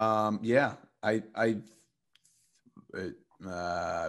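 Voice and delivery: very slow, halting, stumbling stutter. Talking to the group about a contract deal, stuttering. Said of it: "sorry guys, I'm stuttering".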